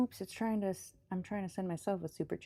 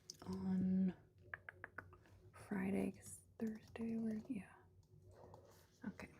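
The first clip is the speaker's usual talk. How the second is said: whispered self-talk, very soft; 10 dB quieter than usual. Speaker setting up a goal, whispering to themself. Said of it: "I'm just whispering to myself".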